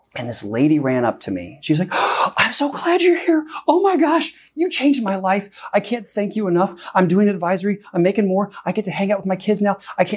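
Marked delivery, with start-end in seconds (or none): 2.0-10.2 high, tearful, grateful gushing, near crying. Retelling a woman thanking them in the hallway: imitating a tearful, grateful woman. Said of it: "she's just almost on the verge of tears".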